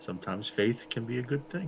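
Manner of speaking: low, hushed half whisper. Narrating a scene, the speaker voices one character speaking to another in a hushed half whisper. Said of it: "he will sort of half whisper, like in a sort of hushed tone".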